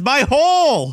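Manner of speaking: high, loud scream of pain. Retelling a wrestling match where Nia lands hard: imitating Nia screaming in pain. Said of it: "she's screaming in pain".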